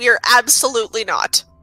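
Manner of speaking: dripping, very sarcastic tone. Speaking for a character in the scene, a player answers: very sarcastic. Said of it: "in a very, very sarcastic voice".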